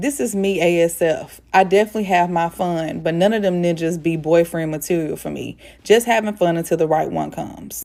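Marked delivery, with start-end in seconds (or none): none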